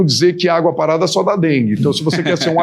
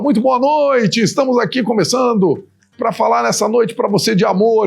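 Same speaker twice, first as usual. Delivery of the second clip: put-on old-school radio announcer voice, pitched up; 6 semitones higher than usual. Recalling broadcasting as a teen over a wireless mic, radio announcer voice. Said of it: "igual falava o povo da rádio".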